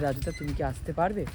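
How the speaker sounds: usual speaking voice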